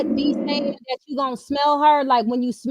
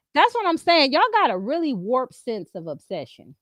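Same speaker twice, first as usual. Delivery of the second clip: normal talking voice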